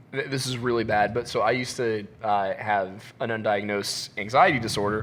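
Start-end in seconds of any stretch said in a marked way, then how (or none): none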